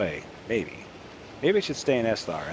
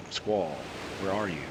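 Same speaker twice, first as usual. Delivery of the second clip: ordinary delivery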